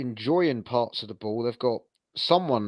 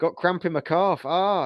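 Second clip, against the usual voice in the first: put-on big booming Yorkshire accent, pitched higher; 7 semitones higher than usual. Imitating a goalkeeper faking cramp to the ref: David Stockdale impression. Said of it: "big booming Yorkshire accent like this".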